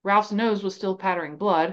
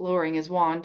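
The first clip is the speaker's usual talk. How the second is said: ordinary delivery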